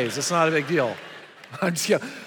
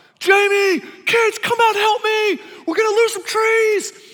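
mock, very high, loud scream; 6 dB louder than usual. Retelling holding up falling trees and calling family from inside: retelling a scream. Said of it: "I'm screaming inside the house".

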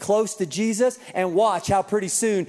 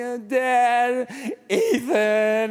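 put-on tearful sobbing whine, "dad" drawn out; 4 semitones higher than usual. Father retells his hurt son coming upstairs to him; imitating son crying. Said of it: "he's crying".

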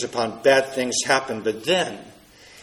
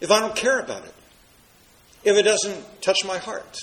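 skeptical, pitched-up put-on objector voice; 6 semitones higher than usual. Voicing the objection to the resurrection: imitating an objector's tone. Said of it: "I didn't mean to have that tone of voice".

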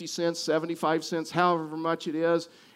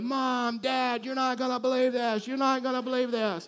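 put-on thrilled children shrieking, high and excited; 7 semitones higher than usual. Retelling kids running off waving money: imitating kids screaming excitedly. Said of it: "they're screaming".

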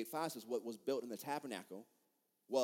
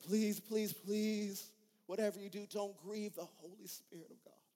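tearful, pleading tone, higher pitch; 9 semitones higher than usual. Retelling a preacher's plea not to grieve the Spirit: imitating Kathryn Kuhlman weeping. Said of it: "She'll begin to cry and says".

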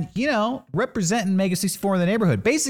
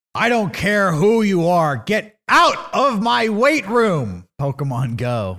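put-on wrestling promoter voice; 3 dB louder than usual. Reading a tweet aloud in Vince McMahon's voice. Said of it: "I'll do this in Vince McMahon's voice".

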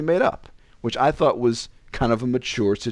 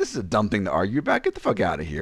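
usual speaking voice

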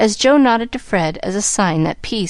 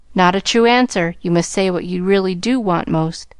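ordinary delivery, nothing marked

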